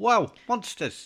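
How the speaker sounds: very high-pitched, loud, put-on Cockney accent. Suggesting a game companion's line be redone, in a cockney accent. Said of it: "If you do it in a Cockney like, accent?".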